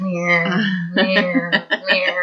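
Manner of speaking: mocking meow, high, slow and drawn-out.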